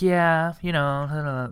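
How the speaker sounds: vague, offhand mumble, "know" drawn out. Retelling a man's reply when told someone heard about Dan: imitating a mumble. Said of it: "like kind of mumbled".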